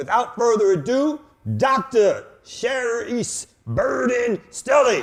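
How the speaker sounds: loud booming voice, high-pitched and slow. Introducing the guest by name with added oomph: Cookie Monster voice. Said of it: "put the Cookie Monster voice on".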